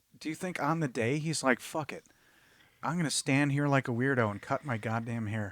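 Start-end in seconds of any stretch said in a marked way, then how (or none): none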